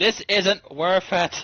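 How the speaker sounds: shouting out. Narrating a panicked scene, the storyteller voices a woman in the crowd yelling out. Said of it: "just yells out".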